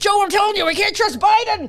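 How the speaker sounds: excited rant, very high pitched and rushed. Retelling a podcast episode, imitating an excited Alex Jones. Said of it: "Alex Jones was getting so into it".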